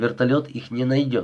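plain

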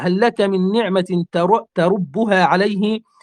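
plain

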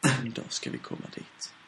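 soft, unvoiced whisper.

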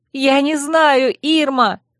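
near-shriek, high and drawn out. The narrator answers Irma, her nerves not made of iron, almost shrieking. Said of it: "почти взвизгнула я".

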